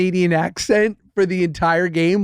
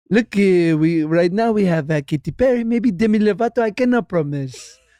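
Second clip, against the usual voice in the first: put-on French Canadian accent on English. Speaker acting out what the other side said, in a deep french canadian accent. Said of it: "with their deep French Canadian accent and they go".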